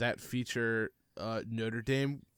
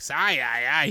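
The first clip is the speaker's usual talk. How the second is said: put-on duck voice, higher and louder; 3 semitones higher, 10 dB louder than usual. Comparing how Psyduck and Breck sound: Psyduck impression. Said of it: "Psyduck is like".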